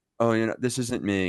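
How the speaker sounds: mock angsty, mopey emo delivery. Retelling a wrestling match, imitating John Cena acting emo. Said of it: "acted all emo like".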